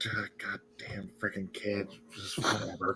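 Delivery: very quiet, slow, breathy, grumbling mutter under breath. Playing a character following a kid up a staircase: muttering under breath. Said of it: "I'm just muttering under my breath".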